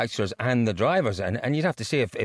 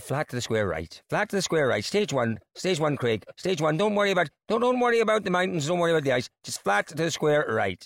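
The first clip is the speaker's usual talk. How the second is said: put-on Southern Irish accent with raised pitch; 7 semitones higher than usual. Asked for a Southern Irish accent, giving co-driver Chris Patterson's calls: Southern Irish accent. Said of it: "you do such a good Southern Irish accent".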